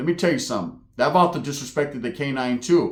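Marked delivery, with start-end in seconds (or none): none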